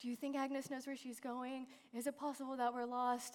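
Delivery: anxious, worried, hushed half-whisper. Retelling how team members asked about being lost: imitating team members half-whispering.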